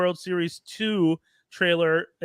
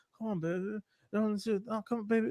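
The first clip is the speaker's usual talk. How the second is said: begging, pleading voice; 3 semitones higher, 9 dB quieter than usual. Retelling what a guy in a movie theater said to his girl: imitating a guy begging. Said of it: "him begging her".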